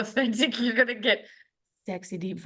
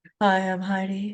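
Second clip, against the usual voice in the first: playful, mock-sexy put-on voice; 2 semitones lower than usual. Starting the podcast, the speaker introduces herself to everyone: put-on sexy voice. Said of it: "My sexy voice with my microphone".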